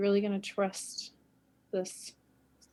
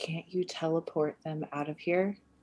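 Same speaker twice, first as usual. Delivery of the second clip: whisper, lower pitch; 4 semitones lower than usual. A player's character comes up beside Rune and whispers to Rune: whispering. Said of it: "just like whisper".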